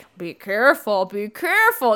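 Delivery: weird, oddball ghostly voice. Retelling a story scene where a ghost warns someone: Ghosty Eddie voice. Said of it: "That's my Ghosty Eddie voice".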